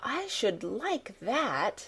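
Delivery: words stretched out, very slow and drawn-out. Reading a boy's dreamy answer about a secret garden: speaking very slowly. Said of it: "he said very slowly".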